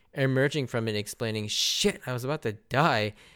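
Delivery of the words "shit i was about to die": put-on mildly annoyed tone. Speaker retells a character emerging from debris after a huge fall, acting out mild annoyance. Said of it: "only mildly inconvenienced and annoyed".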